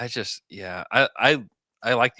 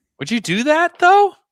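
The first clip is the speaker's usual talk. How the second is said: very high, very loud put-on squeal; 11 dB louder than usual. Discussing a player trade, the speaker asks in a high-pitched voice. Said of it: "when you do this high pitch voice".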